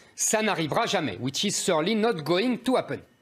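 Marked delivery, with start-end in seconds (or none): 1.2-3.0 English spoken in ridiculous heavy French accent. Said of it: "Pardon pour mon accent ridicule".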